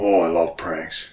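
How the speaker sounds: low, gruff character voice. Retelling a running gag where the NPC answers a question, gruff Old Cobb voice. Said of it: "he just talks like this. He's real gruff".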